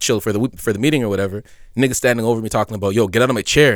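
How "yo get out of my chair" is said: ordinary talk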